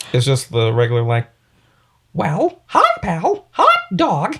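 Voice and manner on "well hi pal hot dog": very high pitch, drawn out. Asked to do a Mickey voice, performing it: Mickey Mouse voice. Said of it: "Can you do a Mickey right now?".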